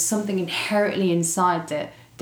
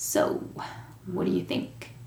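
put-on whispered, hushed American accent; 8 dB quieter than usual. Retelling what a sponsor asked him at a meeting, imitating Ted's American accent. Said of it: "with his American accent".

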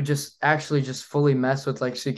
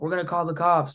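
mock screaming, higher pitch; 4 semitones higher than usual. Retelling how guys in golf carts threatened him: imitating someone screaming. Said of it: "screaming at me, like".

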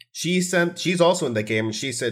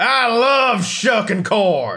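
put-on, very high, loud, drawn-out excited screaming yell; 10 semitones higher, 6 dB louder than usual. Recalling a moment years ago, speaker is retelling an in-character scream. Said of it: "I just screamed in character".

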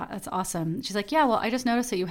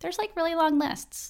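put-on very high, squeaky teenage-dog voice; 9 semitones higher than usual. Talking about kidney donation, speaking in Beja's voice. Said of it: "That's my dog Beja's voice".

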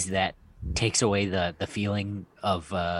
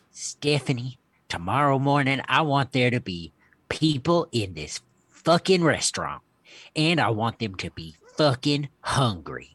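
put-on southern accent in a grandmother voice; 4 semitones higher than usual. Reading an entry as the speaker's grandmother addressing the speaker's mom, southern accent. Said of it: "read The Wish, I guess, in a southern accent".

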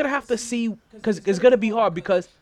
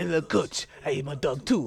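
put-on French accent, lower and quieter; 8 semitones lower, 6 dB quieter than usual. Quoting a player's words to his head coach: imitating Frank Ntilikina in a French accent. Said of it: "let me make sure I get my good French accent going".

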